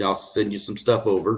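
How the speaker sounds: ordinary talk, nothing marked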